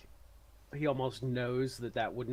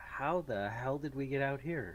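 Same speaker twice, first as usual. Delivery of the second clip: normal talking voice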